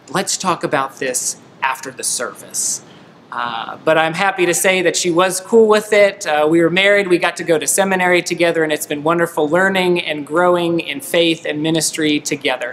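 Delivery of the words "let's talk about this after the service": whisper, quieter and lower. Recalling a church service, the speaker retells his wife-to-be's reply, retelling a whisper. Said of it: "she leaned back to me and whispered".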